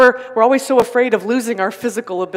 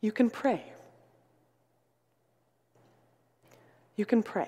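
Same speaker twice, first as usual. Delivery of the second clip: very hushed, soft, kind, gentle, tender voice; 14 dB quieter than usual. Recalling the grandmother comforting a woman, quoting her in a kind, gentle voice. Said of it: "in a very kind and gentle voice".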